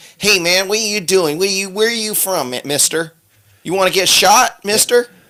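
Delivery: very high, squeaky put-on cowboy-type voice.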